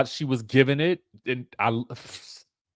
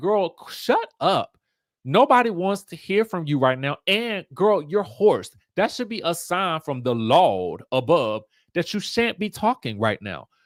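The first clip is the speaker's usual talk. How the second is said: scolding, belittling voice; 4 semitones higher than usual. Retelling how Evelyn took Denise to task: imitating Evelyn scolding. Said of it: "she literally took Denise to task".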